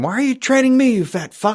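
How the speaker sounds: very high, shrill screaming shout. Imagining a scene where a trainer is yelled at: imitating a character yelling. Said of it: "him yelling at him".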